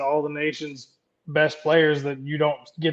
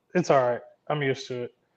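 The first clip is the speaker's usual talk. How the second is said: plain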